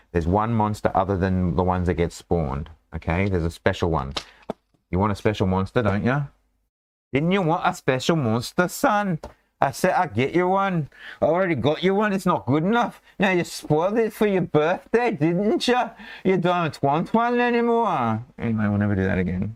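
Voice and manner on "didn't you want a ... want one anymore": very high-pitched scolding yell. Playing a parent scolding his son on stream, mock yelling at a son. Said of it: "I'll stop yelling".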